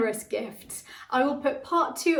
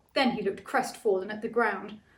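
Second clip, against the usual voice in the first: plain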